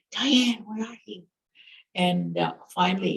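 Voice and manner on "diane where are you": put-on whisper, higher. Retelling a brother searching for his cousin: imitating someone whispering. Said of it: "And he's whispering".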